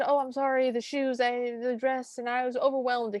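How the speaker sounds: high-pitched, halting, fumbling, broken-off speech. Retelling a scene, the speaker voices Anastasia making excuses, Anastasia talking rapidly. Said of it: "Anastasia is talking rapidly".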